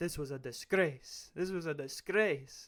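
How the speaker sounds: slow, deliberate, aggrieved, indignant tone with attitude. Imitating Arteta's attitude towards referees after bad calls: imitating Mikel Arteta angry at refs. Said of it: "Arteta's got this attitude towards refs where it's like".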